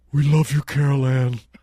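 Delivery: heavenly, divine-sounding voice. Showing what Jesus sounds like: Jesus voice. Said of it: "You know what Jesus sounds like to me?".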